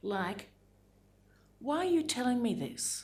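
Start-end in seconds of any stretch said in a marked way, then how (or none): 1.6-3.0 high, pitched-up plaintive tone. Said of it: "in that often plaintive tone".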